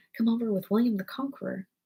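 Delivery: ordinary delivery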